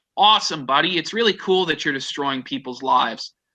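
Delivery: ordinary delivery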